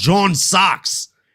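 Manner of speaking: put-on drawn-out Australian accent. Arguing with a friend about what a man says in a clip: drawn-out australian accent. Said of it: "remember that he has an Australian accent".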